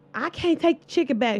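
put-on woman's yell. Retelling a worker yelling at another woman over chicken: retelling a lady yelling. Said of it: "she started yelling at her like".

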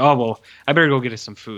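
acted-out nervous, anxious, panicky scrambling delivery. Retelling a movie character's excuses to leave: imitating quiet anxious panic. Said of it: "in a very quiet way, like, panic".

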